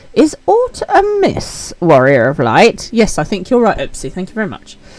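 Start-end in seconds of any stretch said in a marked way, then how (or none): 0.2-2.9 put-on witch voice. Voicing the character Ukulele from a game: witchy voice. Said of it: "which was a witchy kind of voice".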